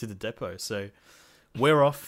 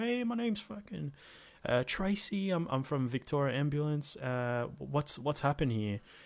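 put-on American accent, pitched much higher; 5 semitones higher, 4 dB quieter than usual. Retelling what an ambulance worker said on arrival, imitating Tracy's American accent. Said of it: "She sounded American".

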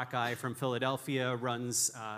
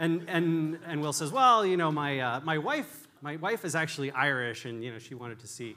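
ordinary talk, nothing marked

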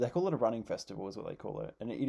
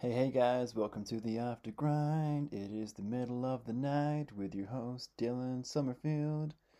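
put-on American accent. Podcast host opening the episode in the middle of the night: put-on American accent. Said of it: "I've got an American accent on".

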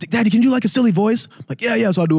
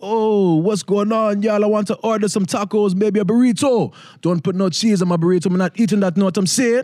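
fake Jamaican accent, pitched up; 5 semitones higher than usual. Recalling ordering at Taco Bell, suddenly switching into a put-on Jamaican accent. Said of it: "I just put on the Jamaican accent".

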